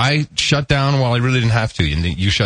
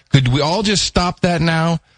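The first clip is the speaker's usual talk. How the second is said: fake American Southern accent, pitched up; 6 semitones higher than usual. Asking everyone to stop the jokes about the South, in a put-on Southern accent. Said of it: "is that your idea of a Southern accent?".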